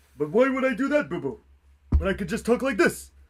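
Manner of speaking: loud, big, high-pitched cartoon bear voice. Told to talk in Shaggy voice on stream, a co-streamer answers in Yogi voice. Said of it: "That's Yogi, right?".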